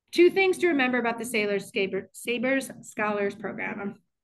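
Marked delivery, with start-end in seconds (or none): 0.2-1.8 rushed, very fast, slightly louder. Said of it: "speaking way too fast".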